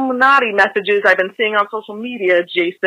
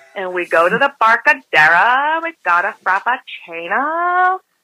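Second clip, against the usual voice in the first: exaggerated, overdone Californian accent. Caller demonstrating how California people talk: The Californians sketch voice. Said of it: "That's how we talk".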